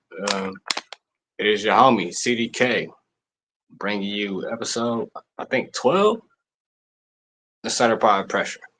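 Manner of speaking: level, unhyped, flat monotone delivery. Podcast host introducing the episode, in a monotone voice. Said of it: "Excuse me for the monotone voice".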